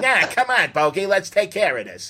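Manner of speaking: put-on high, swooping old-movie voice. Describing a movie's sidekick character, imitating William Demarest's voice. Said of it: "that kind of voice".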